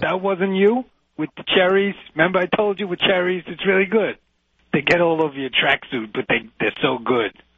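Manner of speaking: put-on New York Brooklyn accent. Teasing another speaker about trail mix, in a Brooklyn accent. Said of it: "I'm talking in a Brooklyn accent".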